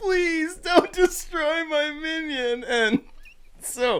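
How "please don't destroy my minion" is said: very high, slow, drawn-out mock sobbing child voice. Retelling a kid begging not to lose his toy: imitating a crying kid. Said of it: "as he's, like, crying, like".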